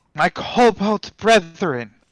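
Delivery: loudly projected rousing voice. Voicing a dragon-kin character rallying the kobolds from afar: in character, voice projected far. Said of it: "I will speak in Draconic and make my voice heard".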